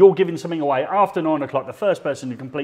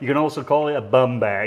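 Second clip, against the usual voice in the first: put-on American accent. Retelling what a passing lady turned and said, in an American accent. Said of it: "in an American accent".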